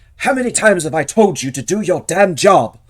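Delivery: very loud, high, berating yell. Narrating the scene, the speaker voices Lord Misthill at the guard: Lord Misthill berating. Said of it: "berating the guard".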